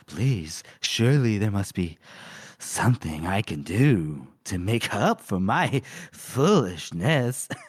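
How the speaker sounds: put-on seductive voice, low, slow and sultry. Retelling a book scene where the character pleads: retelling a put-on seductive voice. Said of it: "she changes her voice a little bit, little, you know, sexual".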